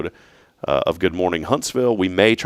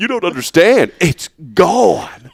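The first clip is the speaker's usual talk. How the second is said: mock tearful male voice, higher and louder; 10 semitones higher, 6 dB louder than usual. Imitating a man in a supplement commercial who starts crying: imitating a man crying. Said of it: "The way he says it is".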